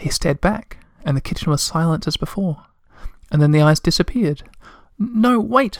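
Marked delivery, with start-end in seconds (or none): 5.0-5.8 very high-pitched, anxious, worried shout. The troll calls after eyes vanishing under the sink, shouting anxiously. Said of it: "Moomin Troll shouted anxiously".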